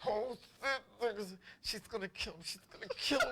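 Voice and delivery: mock words pushed through stifled, laughter-choked giggles. Showing the laugh held back when someone gets in trouble: imitating stifled laughter. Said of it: "that laugh where you don't wanna laugh".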